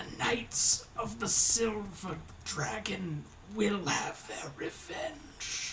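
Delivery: hushed, breathy dying whisper. Voicing a dying enemy's last words after a gasp and hiss: dying enemy's whisper. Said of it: "a whisper clings in the air for a moment".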